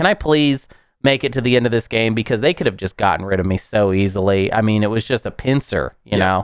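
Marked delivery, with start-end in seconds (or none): 0.0-2.1 acted pleading tone. Recalling a late game, the speaker retells begging to survive. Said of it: "it was basically just begging".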